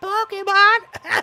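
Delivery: high-pitched voice. Voicing a game character's dialogue while reading aloud: high voice. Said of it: "Can't do this high voice anymore".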